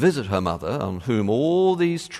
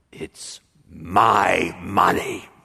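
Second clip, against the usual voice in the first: menacing, sinister hiss with my drawn out; 4 semitones lower than usual. Speaker retelling a mother speaking to her daughter about money: retold sinister hiss.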